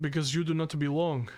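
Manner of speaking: stern, unbending guard voice. Narrator voices the one on the left, staring straight ahead, in a stern voice. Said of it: "in a stern voice".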